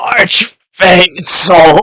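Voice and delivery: cryptid creature voice. Casting minor illusion to make a voice call out: cryptid voice. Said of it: "a cryptid voice say".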